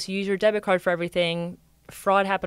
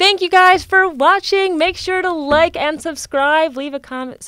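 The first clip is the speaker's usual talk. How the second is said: loud shouting, higher and louder; 9 semitones higher, 8 dB louder than usual. Signing off to the viewers at the end: yelling. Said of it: "Sorry, I yell".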